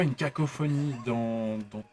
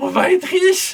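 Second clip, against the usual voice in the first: piercing squeaky creature voice, very high, very loud; 13 dB louder than usual. Describing the first voice one hears from a small creature, shrill high creature voice. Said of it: "un peu criarde, un peu aiguë comme ça, qui fait".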